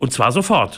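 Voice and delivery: ordinary talk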